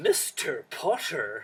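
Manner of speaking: put-on full-effort Edinburgh Morningside accent. Describing Harry Potter characters' voices, the speaker quotes McGonagall in McGonagall's Edinburgh Morningside accent. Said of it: "she does it in her best Edinburgh Morningside accent".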